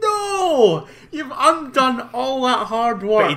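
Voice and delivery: high, shrill, drawn-out howling scream. Retelling own reaction to a blatant penalty: retelling own scream. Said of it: "I was screaming".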